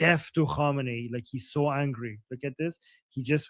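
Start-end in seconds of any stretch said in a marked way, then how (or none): none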